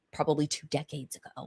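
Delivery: soft, hushed, barely voiced whispered aside. Explaining blog categories to listeners, speaker adds an aside, whispering. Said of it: "I'm whispering it".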